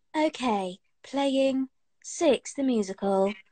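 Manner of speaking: voice-assistant voice, read out. Asked to do it in the Alexa voice, speaker gives an Alexa voice impression. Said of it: "That was quite a good Alexa voice".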